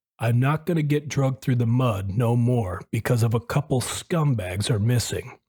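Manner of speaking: ordinary talk, nothing marked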